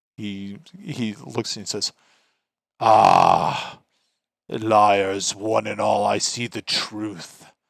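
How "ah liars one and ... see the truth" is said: slow, booming voice filling the hall. Storyteller voices the figure in the hall answering the shelter-seekers: booming voice. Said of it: "his booming voice".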